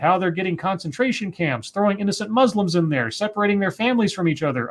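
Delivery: ordinary delivery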